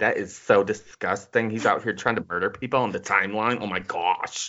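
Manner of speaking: put-on mock lisping voice. Acting out a commenter's tweet: imitating a tweeter with a lisp. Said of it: "Do you think he had a lisp too".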